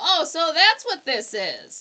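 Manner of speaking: mock, loud, swooping sarcasm dripping in tone. Recapping a scene, the speaker delivers a character's reply to a boy, sarcastic. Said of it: "Roger is sarcastic A F".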